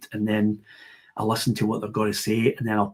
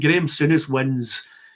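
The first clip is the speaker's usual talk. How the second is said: usual speaking voice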